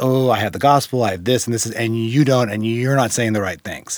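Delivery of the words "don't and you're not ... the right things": normal talking voice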